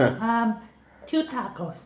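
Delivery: put-on very high little old lady voice. Ordering at McDonald's in the Consuela old lady voice. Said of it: "confident to do the full voice".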